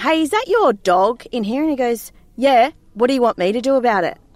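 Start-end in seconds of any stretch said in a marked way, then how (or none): 0.0-1.6 play-acted raised, called-out yell. Telling a story about a dog, calling out to a man by the toilets: retelling a yell. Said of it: "yelled out to him".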